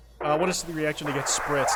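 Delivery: plain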